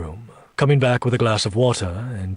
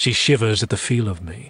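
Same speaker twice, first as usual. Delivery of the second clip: plain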